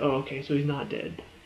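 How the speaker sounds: ordinary delivery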